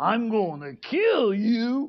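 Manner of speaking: deep, slow, possessed horror-movie voice. Retelling a true scary story, quoting what the guy said: deep voice. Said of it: "This deep voice comes out".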